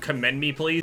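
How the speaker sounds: ordinary delivery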